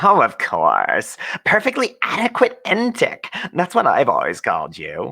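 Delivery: slimy grating mocking voice. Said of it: "oily, grating voice that you've come to associate primarily with mockery".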